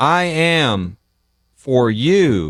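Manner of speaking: unnatural short cadence, pause after am, you drawn out.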